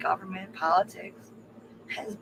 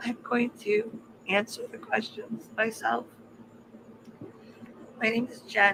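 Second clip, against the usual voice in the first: tearful voice, speaking through tears, crying; 2 semitones higher than usual. Wrapping up her thanks to the team at the end, crying. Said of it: "because I'm just crying".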